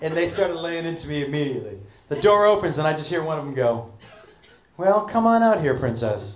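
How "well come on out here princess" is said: mocking, sarcastic, cutting and biting tone. Retelling how a woman at the top greeted him, imitating a sarcastic woman. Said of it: "sarcastic, biting".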